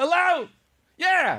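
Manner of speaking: full-volume yelling, very high-pitched. Showing how someone would answer the phone: pretend full volume shouting. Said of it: "Full volume shouting".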